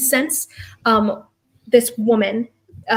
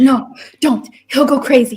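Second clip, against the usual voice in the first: slow, frightened voice; 4 dB louder than usual. Quoting what she says to Mary, who is rushing in: retelling a frightened command. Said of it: "a frightened imperative".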